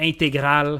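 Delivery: French Canadian accent. Listing car types, saying the word as in French Canadian: French Canadian accent. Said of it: "as we would say in French Canadian".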